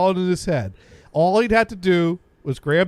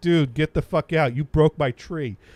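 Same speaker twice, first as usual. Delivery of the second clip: put-on upset, angry voice; 2 semitones lower than usual. Retelling how a housemate reacted to the broken tree: imitating Jim, angry. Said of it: "He was not happy about this".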